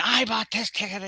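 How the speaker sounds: furious, high, angry screaming. Retelling angry passengers at the gate: imitating people screaming.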